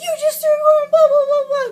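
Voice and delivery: very high, very loud, shrill, frantic, panicked crying scream. Retelling freaking out after he threw the cat: imitating own panicked screaming. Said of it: "crying, screaming".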